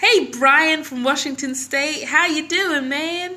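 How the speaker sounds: terrible, bad fake American accent, very loud. Greeting one of the audience who send in questions: terrible American accent. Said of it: "That's a terrible American accent".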